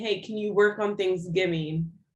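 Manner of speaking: usual speaking voice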